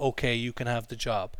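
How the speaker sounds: ordinary delivery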